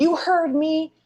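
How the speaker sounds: screaming out. Voicing a character challenging a tower in an RPG: screaming. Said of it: "And I scream out and I say".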